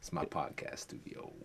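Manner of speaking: whispered, hushed, breathy, seductive sultry purr. Talking to the camera about the room: mock seductive tone. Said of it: "why you trying to seduce a camera?".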